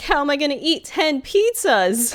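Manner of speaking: high, loud laughing and crying at once. Retelling how he reacted when nobody came to his birthday party: imitating laugh-crying. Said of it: "And he's like laugh crying".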